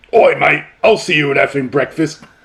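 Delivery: hard-boiled, tough English hard man voice. Picturing a hard-boiled hard man of England talking: hard-boiled English hard man. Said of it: "hard man of England is walking around literally saying".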